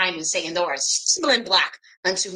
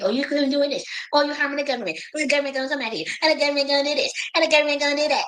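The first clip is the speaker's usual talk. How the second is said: mocking, scornful, higher-pitched, fretful, scared-sounding voice; 7 semitones higher than usual. Retelling what accusers say, mocking imitation of scared accusers.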